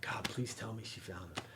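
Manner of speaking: hushed, pleading tone.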